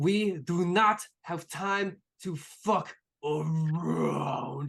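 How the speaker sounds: slow, scowling, disapproving tone.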